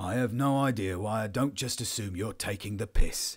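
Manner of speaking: grumbled under the breath, fed up. Narrator reads Powell answering the other speaker's claims: muttered. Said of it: "he muttered".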